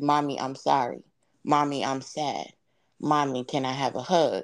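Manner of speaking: ordinary talk, nothing marked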